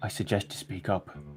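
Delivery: quiet, slow whispering. In a roleplay, a player's character whispers next to a gagged vole: whispering. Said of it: "just kind of whisper next to it".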